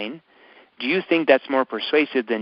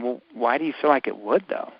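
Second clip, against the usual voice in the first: skeptical, doubtful, quizzical tone; 4 dB quieter than usual. Teaching how to ask a clarifying question, in a skeptical questioning tone. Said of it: "And you're going to say it in that tone".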